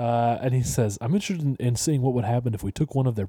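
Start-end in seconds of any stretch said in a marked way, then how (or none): 1.0-3.3 put-on sexy voice. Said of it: "with a sexy Dan Harmon voice".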